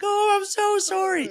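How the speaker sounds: play-acted sobbing, bawling, pitched way up. Retelling breaking down as dad opened the door, imitating bawling apology. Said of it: "I just started bawling".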